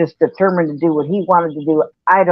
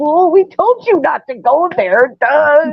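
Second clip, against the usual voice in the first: very high, words squeezed out through laughter; 10 semitones higher than usual. Retelling what the elders said: imitating someone laughing while talking. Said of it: "laughing even more than me".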